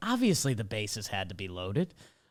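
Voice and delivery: very quiet, low, hushed mutter under the breath. Retelling a commentator's remark on air: imitating muttering under breath. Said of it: "he kinda under his breath".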